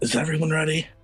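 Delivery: soft half-whisper in a character voice. Asking the party in character whether everyone is ready: half-whispering in character. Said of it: "I'm just gonna whisper".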